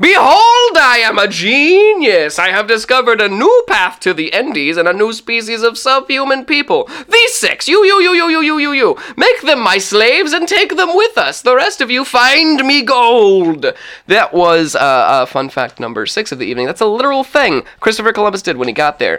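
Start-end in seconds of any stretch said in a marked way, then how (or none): 0.0-13.6 very high, swooping, all-out top-of-lungs shouting. Voicing a conqueror for the players: Christopher Columbus yelling at the top of his lungs. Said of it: "Christopher Columbus yelling at the top of his lungs".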